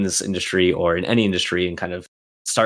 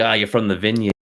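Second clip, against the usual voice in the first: poorly done, fake put-on Boston accent. Retelling what a pr guy always says to them, bad boston accent. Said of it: "a shitty Boston accent".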